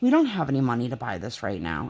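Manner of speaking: dry, matter-of-fact, deadpan, low delivery. Retelling what a woman said to the girls, in a retold deadpan. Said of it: "looks at the girls like deadpan in the face".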